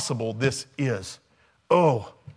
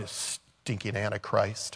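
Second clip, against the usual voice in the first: put-on mutter under breath, quieter; 4 semitones lower, 8 dB quieter than usual. Speaker re-enacts what they say when tapping a card at a store, retold mutter under breath. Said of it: "I just mutter under my breath".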